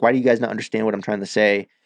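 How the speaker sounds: normal talking voice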